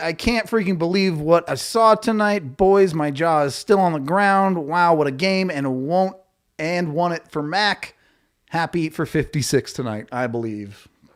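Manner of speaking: ordinary talk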